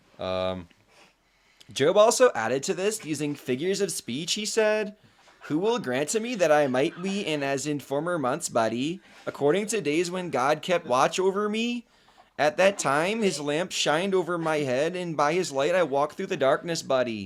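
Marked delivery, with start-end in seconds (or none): 1.7-17.3 Albertan accent. Reading a scripture passage aloud as a sample for the chat: Alberta accent. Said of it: "read in an Alberta accent".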